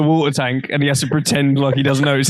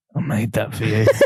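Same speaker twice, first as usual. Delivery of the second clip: put-on man's voice, speaking softly, murmured; 5 semitones lower, 4 dB quieter than usual. Retelling Ron handing over a locket, imitating Ron speaking softly. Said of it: "really softly goes".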